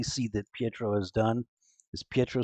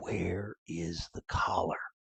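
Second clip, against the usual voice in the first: slow, hushed, quiet whisper; 4 semitones lower, 6 dB quieter than usual. Voicing an intruder holding a blade to a sleeper: whisper. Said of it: "and you hear a whisper".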